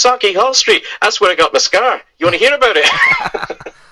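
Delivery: put-on Glasgow brogue, very high and swooping. Retelling what a man said once they both lapsed into accents: Scottish brogue. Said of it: "we lapse into that Scottish brogue".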